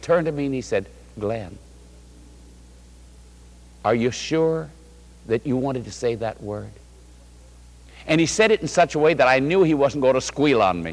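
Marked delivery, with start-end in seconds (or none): 1.2-6.7 soft, sweet, wholesome, gentle, kindly hushed whisper. Recounting your older brother's gentle question after you let a word slip, retelling a sweet, kind voice. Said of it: "in the sweetest, most wholesome, the kindest way".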